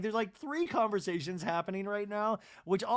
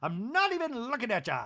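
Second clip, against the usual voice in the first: put-on Irish accent, much higher pitch; 4 semitones higher than usual. Retelling what Bronwyn said to Brittany in an argument, imitating Bronwyn with an Irish accent. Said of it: "Like she's Irish".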